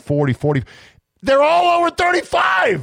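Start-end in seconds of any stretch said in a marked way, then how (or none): 1.2-2.8 very high, swooping and climbing yell. Reading out labs' amplification cycle numbers to an audience: yelling. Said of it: "Am I yelling? I'm yelling".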